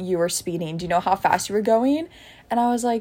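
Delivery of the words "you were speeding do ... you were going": usual speaking voice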